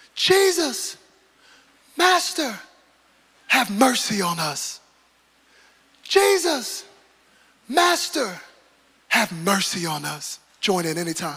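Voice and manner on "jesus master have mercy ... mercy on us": put-on, loud, shouted pleading cry. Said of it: "they shouted out at him".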